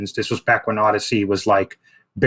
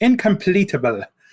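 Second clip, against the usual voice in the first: fake English accent pitched very high; 10 semitones higher than usual. Insisting a word be said with an accent, put-on english accent. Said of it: "You got to say it with an English accent".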